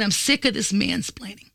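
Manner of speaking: plain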